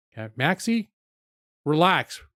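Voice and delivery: insistent, heated, urgent, pressing delivery. Calming the chat before ending the stream: raised voice. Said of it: "I didn't mean to raise my voice".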